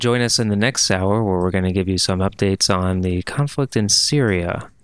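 low public radio announcer. Announce what is coming in the next hour in your NPR voice. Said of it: "don't do your NPR voice".

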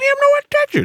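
high squeaky cartoon voice. Mocking a company's earlier statement to friends, in a Mickey Mouse voice. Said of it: "His Mickey Mouse voice".

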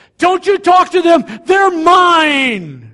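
very loud, high bellow, "mine" stretched out. Retelling a pushy salesman yelling at another salesman: imitating someone yelling. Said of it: "he yells at the other one".

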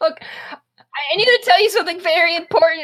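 put-on high, loud, fast, urgent child's pleading voice.

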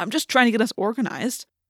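defensive, justifying tone. [name] answers Rachel's teasing, defensive. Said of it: "[name] said defensively".

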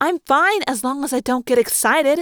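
defensive, on-the-defensive tone. A narrator reads the speaker's reply to the others' remarks, defensively. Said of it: "I said defensively".

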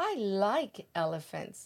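ordinary delivery, nothing marked

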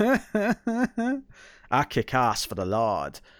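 bad, weak, lacking New Zealand accent, swooping. Quoting a film line in conversation, in a bad new zealand accent. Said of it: "my new zealand accent is uh lacking".

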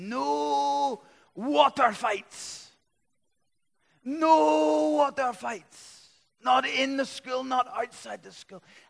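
put-on high, loud female Scottish accent. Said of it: "put on my best Scottish accent here, female Scottish accent".

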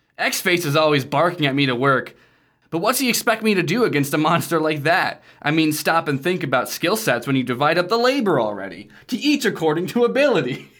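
put-on cartoon game hero voice. Reading a character's diary entry aloud: Sonic the Hedgehog voice. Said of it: "he sounds like Sonic the Hedgehog now".

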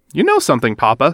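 ordinary delivery

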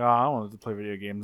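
put-on soft, sad, crestfallen voice. Retelling a scene where Raph misses his turn at video games: imitating Raph sounding sad. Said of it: "Raph's clearly all sad".

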